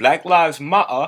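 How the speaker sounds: put-on British accent, dropped t's. Retelling a meme about British people dropping T's: imitating a British accent. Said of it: "British people be like".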